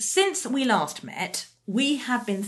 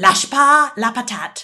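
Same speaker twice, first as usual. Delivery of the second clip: slow, loud bad French accent. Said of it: "excuse my probably appalling French accent".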